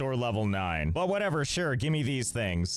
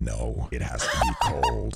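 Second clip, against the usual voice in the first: very deep, swooping put-on voice; 3 dB louder than usual. Acting out their own reply to people asking, in a very deep voice. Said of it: "Why is your voice so deep?".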